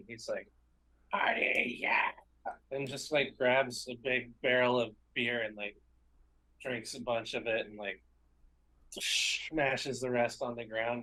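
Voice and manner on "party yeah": whispered, breathy, gleeful, excited goblin voice. A storyteller voices Milk's stoked goblin side, screaming excitedly. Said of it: "And he's screaming".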